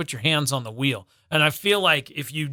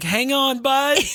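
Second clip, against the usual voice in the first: cheerleader voice, pitched way up, cheering and encouraging; 10 semitones higher, 4 dB louder than usual. Retelling encouraging a car through the car wash, retelling cheering on a car. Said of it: "car wash cheerleader".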